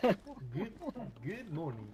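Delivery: clumsy put-on Kenyan accent. Asked to try a Kenyan speaking Swahili after warning you do accents badly, use a bad Kenyan accent. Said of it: "a Kenyan speaking Swahili".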